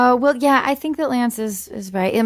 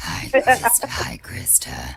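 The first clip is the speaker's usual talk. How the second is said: put-on demonic voice; 11 semitones lower, 5 dB quieter than usual. Asked by a guest to say her name: House Bunny satanic voice. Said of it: "will you say my name in the satanic voice".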